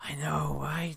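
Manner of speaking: whispering. Voicing a character whispering back in agreement: whispering character reply. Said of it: "He'll whisper".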